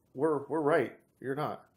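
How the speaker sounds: ordinary talk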